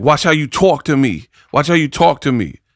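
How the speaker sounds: imitated, put-on New York accent. Retelling a woman's video and quoting her: imitating a New York accent. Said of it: "she's talking with like a New York accent".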